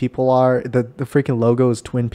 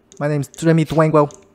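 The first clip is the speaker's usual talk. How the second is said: fake, put-on Brooklyn accent; 3 semitones higher than usual. Joking about a podcast character, giving his name: put-on Brooklyn accent.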